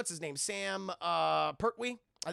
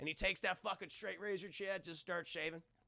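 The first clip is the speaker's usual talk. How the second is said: ordinary talk, nothing marked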